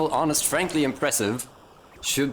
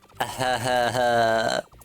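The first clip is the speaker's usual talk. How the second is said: put-on, drawn-out douchey laugh. Imagining a reply in a douchebag's voice: douchebag-voice laugh. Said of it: "in the voice of like a douchebag".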